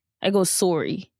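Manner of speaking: Canadian-accented 'sorry'. Admitting to watching too many canadian videos, saying it with a canadian 'sorry'. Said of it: "I don't say sorry correctly. I go sorry... I watch too many Canadian videos".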